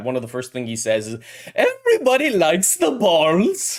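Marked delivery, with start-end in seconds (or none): 1.5-3.8 very high, drawn-out, swooping bad German accent. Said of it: "his accent is really bad".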